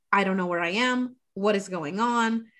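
mock panicked voice. Retelling a scene where a coach loses track of where he is: imitating someone panicking. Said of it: "And he's, like, panicking".

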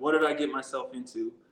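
ordinary talk

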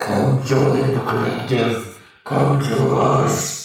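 rough, throaty, guttural voice. Voicing figures crawling up the sides, in a guttural voice. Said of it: "they're all saying in this guttural voice, it's like".

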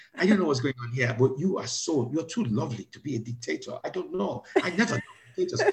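rough attempted Italian accent. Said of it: "I can't do Italian accent".

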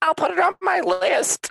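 put-on very high, crackly, creaky elderly grandma voice. Teasing Tori about her response to every TV show recommendation, do Tori as a 90-year-old grandma. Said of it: "Why am I a 90-year-old grandma?".

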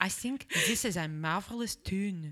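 put-on line slipped into a Scottish accent. Quoting a young man at a funeral procession: Scottish accent. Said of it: "I went Scottish there".

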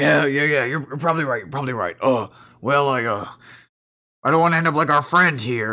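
hesitant fantasy orc character voice. Voicing an orc worried about failing to find a sheep: orc voice. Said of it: "but he goes".

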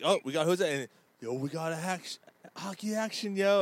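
radio talk-show host announcing voice. Retelling how a talk show host greeted a caller: Jason Martinez impression. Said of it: "he'd be like".

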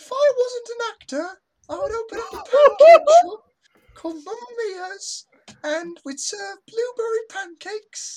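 put-on British accent. A performer delivers a prepared line while others listen; British accent. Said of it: "you got the British accent in there too".

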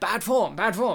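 genteel, courtly, gentlemanly pirate voice, disapproving tut-tut. Retelling what Blackbeard keeps saying in the movie, imitating Blackbeard. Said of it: "Blackbeard throughout this movie is like".

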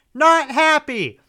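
very high-pitched, very loud, shrill scream. Describing a movie scene where a locked-up character stares at the camera, imitating Holly screaming. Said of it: "and just screams".

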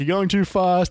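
urgent high shout. Retelling how people yelled during a flight sim: imitating people yelling. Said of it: "people are yelling at me".

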